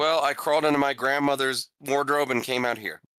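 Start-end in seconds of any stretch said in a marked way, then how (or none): none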